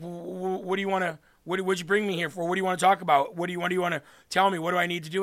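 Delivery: mock nervous man's voice. Retelling a story, voicing the man who sat down as asked, imitating a nervous man. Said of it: "he's all nervous and he's like".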